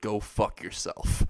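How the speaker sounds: usual speaking voice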